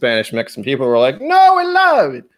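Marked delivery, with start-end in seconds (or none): 1.2-2.1 cartoon Italian accent, very high, very slow, drawn out. Retelling how Spanish and Mexican people reacted: Mario voice. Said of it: "I don't know what accent that was, but that was still Mario".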